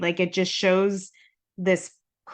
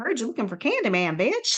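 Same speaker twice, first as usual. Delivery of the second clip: mock sweet, harmless, friendly, quick sing-song innocent voice; 4 semitones higher than usual. Re-enact his line delivery in the lineup, imitating someone trying to sound innocent and friendly. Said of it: "trying to sound as innocent and friendly as possible".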